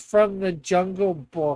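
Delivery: normal talking voice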